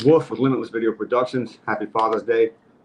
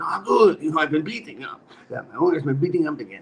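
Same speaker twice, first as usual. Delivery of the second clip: high-pitched put-on goat voice; 5 semitones higher than usual. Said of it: "skit where it's called The Goat".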